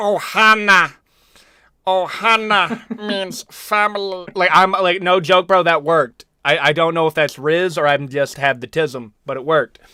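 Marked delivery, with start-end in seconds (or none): 0.0-4.3 high-pitched put-on voice, dragged out very slowly. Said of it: "I can do a killer Stitch impression".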